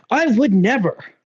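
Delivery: high voice with pitch bouncing up and down.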